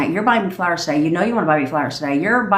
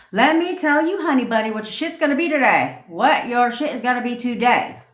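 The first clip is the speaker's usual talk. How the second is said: self-assured, commanding, confident delivery, pitched up; 5 semitones higher than usual. Coaching listeners on how to say it with confidence: confident. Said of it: "See what I'm saying?".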